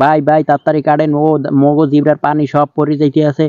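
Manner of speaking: ordinary talk, nothing marked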